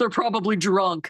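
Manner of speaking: mock grumbling tone. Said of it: "grumbling and mumbling to himself".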